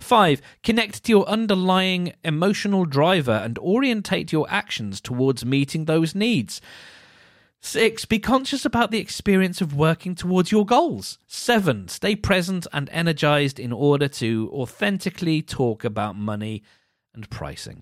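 mocking tone. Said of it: "can you hear the mocking tone in my voice".

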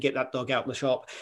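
ordinary talk, nothing marked

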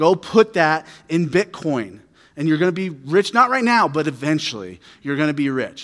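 normal talking voice

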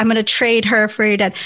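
ordinary delivery

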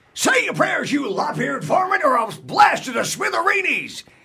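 very high, hollering, shouting cartoon character voice. Quoting a cartoon line that Mel Blanc voiced: Mel Blanc cartoon voice. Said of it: "Mel Blanc was the voice of".

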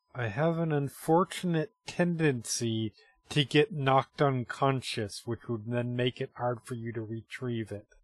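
voice dropped low. Playing a character who glances at Quaven and warns another character: lowered voice. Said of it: "lowers her voice".

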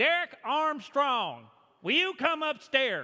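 high, slow Arkansas drawl.

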